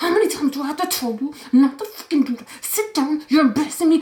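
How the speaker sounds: scolding scream squeezed into a whisper. Retelling a woman scolding a little girl in the hallway: imitating a whisper scream. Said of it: "you can hear her whisper screaming".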